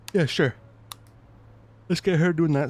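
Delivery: quick words spoken through a yawn. Assigning tasks to group members, yawning while speaking. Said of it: "Sorry, I'm yawning".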